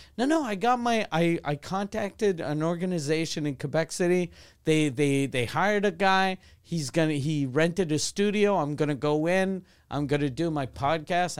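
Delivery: ordinary talk, nothing marked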